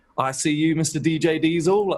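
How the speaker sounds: full put-on British accent, slow and high. Retelling calling out to someone from the stage: full British accent. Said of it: "with, like, a full British accent".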